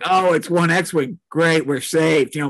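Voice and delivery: ordinary talk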